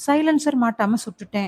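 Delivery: plain reading voice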